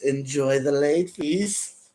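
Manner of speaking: put-on elderly man's voice. Retelling a commando's parting words as he grabs the helicopter ladder, old man's voice. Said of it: "that voice was the same voice as the old man".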